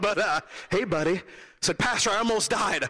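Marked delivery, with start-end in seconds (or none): 0.0-1.2 put-on gentle calming voice, slower. Retelling the pastor's greeting when he answered the phone, imitating his soothing voice. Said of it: "calming, soothing voice".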